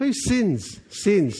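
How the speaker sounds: natural, everyday New Zealand accent. Speaker addressing a crowd, slipping into a New Zealand accent. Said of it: "it's my New Zealand accent".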